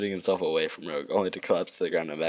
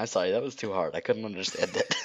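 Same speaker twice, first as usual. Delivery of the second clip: plain reading voice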